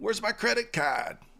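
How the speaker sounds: awful put-on Boston accent, very high pitch. Retelling what a woman said to Stuart after he shopped with her card, in an awful Boston accent. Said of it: "That's my awful uh, Boston accent".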